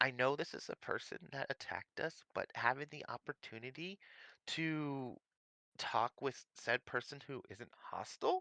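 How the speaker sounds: hushed voice. Talking quietly to another speaker about a person who attacked them: whispering. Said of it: "I'm hushing this down".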